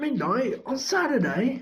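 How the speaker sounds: high, raspy, hoarse voice. Reading a story aloud, giving Ron's reply to Hermione in a hoarse voice. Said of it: "he said in a hoarse voice".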